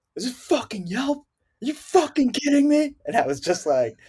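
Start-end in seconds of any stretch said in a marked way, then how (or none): 0.2-3.0 play-acted very high, climbing, furious screaming rant. Retelling a man on the phone screaming at his staff; retelling an angry scream. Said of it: "He's screaming at his staff".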